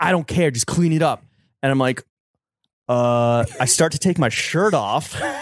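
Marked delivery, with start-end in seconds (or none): 0.0-1.2 barked yell, sounding like couldn't care less. Retelling how a man yelled at him to clean up the bus, retelling a yell. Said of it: "He's like yelling at me".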